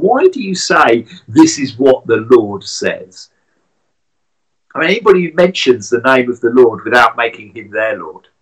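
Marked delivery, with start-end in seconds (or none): 0.0-3.3 mocking, sarcastic tone. Retelling an angry man parroting another's words back to him, acting out sarcastic mocking. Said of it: "a sarcastic, mocking tone".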